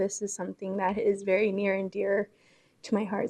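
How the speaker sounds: choked-up voice catching on held-back tears. Saying a few words of thanks at the mic to everyone, choking up. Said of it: "Sorry, I'm not going to cry".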